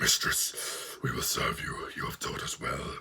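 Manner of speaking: whispered, deep, gruff, breathy creature voice. Speaker imitates the costumed creatures in a story, deep gruff creature impression. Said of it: "not a one hundred percent accurate impersonation".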